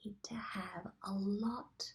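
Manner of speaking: close, soft, confiding, secret-sharing whisper. Addressing listeners about a really important final point, whispering. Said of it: "I'm whispering".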